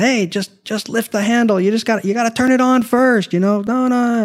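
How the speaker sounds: high shouting. Retelling yelling instructions at a customer across a lot: imitating his own past yelling. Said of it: "I just started yelling from across the parking lot".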